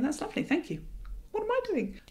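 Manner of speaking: high, bewildered voice.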